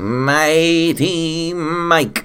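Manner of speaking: very high alien voice, "Mighty" stretched out. Co-host is introduced on the comic podcast, answering in a somewhat alien voice. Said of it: "that was a somewhat alien voice you got going on there".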